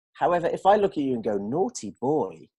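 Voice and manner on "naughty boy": put-on slow, soft naughty boy. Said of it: "that's a completely different meaning".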